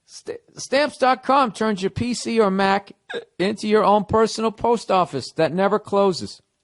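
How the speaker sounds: hiccuping through speech, a bit high. Reading an ad for Stamps.com while talking through hiccups. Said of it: "I got the hiccups".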